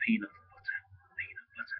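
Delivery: high, barely audible, very quiet whisper. Answering questions for someone asleep nearby so he won't wake, whispering. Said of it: "I'm going to whisper this".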